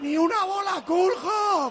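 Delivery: loud, high shouting.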